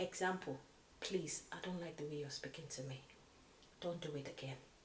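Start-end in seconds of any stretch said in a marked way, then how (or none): 1.0-4.5 very quiet, low, hushed and firmly set voice. Demonstrating how to quietly stand up to a bully, quiet and firm. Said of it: "there's a way you can do it quietly".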